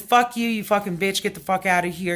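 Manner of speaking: normal talking voice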